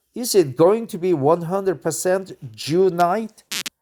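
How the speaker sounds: ordinary delivery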